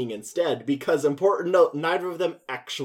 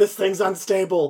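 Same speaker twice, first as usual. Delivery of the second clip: play-acted high, panicky, worried, freaked-out outburst; 5 semitones higher, 3 dB louder than usual. Retelling a movie scene where a sleigh piece falls off: imitating someone freaking out. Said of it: "the guy's freaking out".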